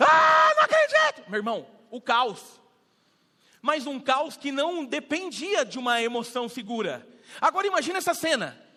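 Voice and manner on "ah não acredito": very high, very loud, shrill bawling scream. Retelling the moment the aunt heard of a death: imitating aunt screaming. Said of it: "Minha tia começou a berrar".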